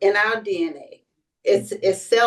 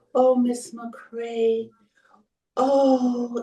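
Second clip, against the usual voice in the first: sorrowful, very slow, lingering drawn-out oh; 3 semitones higher, 3 dB quieter than usual. Retelling a doctor's words after an exam: imitating a sad doctor. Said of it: "and she was so sad".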